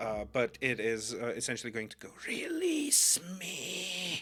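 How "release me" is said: raspy, rough, pitched-up voice. Describing what something essentially says, in a rough, raspy voice. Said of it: "in this kind of like raspy voice".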